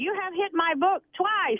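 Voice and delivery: put-on high German-like accent. Retelling what a stranger on a crowded ride said: imitating a German-sounding accent. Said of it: "It sounded almost like a German".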